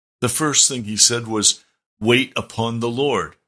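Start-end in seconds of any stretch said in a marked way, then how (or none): 2.0-3.3 authoritative, stately, magisterial, grand delivery. Quoting the first thing he said to the speaker, in a magisterial voice. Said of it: "he said it in a magisterial voice".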